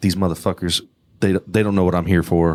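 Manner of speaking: muttering under breath. Retelling a stranger's words at the train stop: imitating someone muttering under breath. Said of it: "just under her breath".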